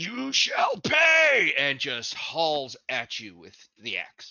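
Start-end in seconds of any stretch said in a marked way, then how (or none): 0.0-1.5 very high, very loud enraged shout through gritted teeth. Voicing a Goliath who turns and swings an axe: enraged, through gritted teeth. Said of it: "enraged, just all pissed off Goliath turn with that gritted teeth and goes".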